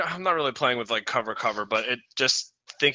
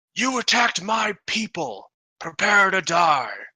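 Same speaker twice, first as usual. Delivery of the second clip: booming, pitched-up bellowing; 6 semitones higher than usual. A voice speaks out of the fog cloud: bellowing voice. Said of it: "a sort of a bellowing voice that says".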